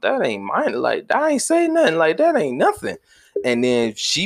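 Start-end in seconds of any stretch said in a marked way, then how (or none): 0.0-3.0 high, dismissive brush-off tone. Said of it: "I may think, like".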